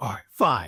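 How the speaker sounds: low, deflated, beaten resignation. Retelling a DUI arrest, quoting the charged man's reply, imitating a deflated reply. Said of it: "totally just like deflated his whole night".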